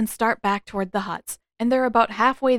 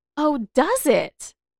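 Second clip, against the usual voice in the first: deeply intrigued, curious tone, pitched up; 5 semitones higher than usual. Suki replies after a moment of silence, in a very intrigued voice. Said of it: "in a very intrigued voice".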